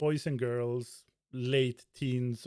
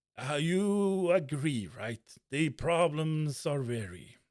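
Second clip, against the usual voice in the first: put-on very drunk-sounding voice with drawn-out "you"; 3 semitones higher than usual. Storyteller voicing a man at the bar who speaks to you, drunken voice. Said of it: "says with like a very drunken state".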